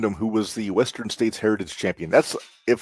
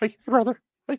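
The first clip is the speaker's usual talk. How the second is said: squeaky, very high-pitched put-on voice; 14 semitones higher than usual. Act out the man who slammed his hand in a car trunk, imitating his high voice. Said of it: "get that high voice of his".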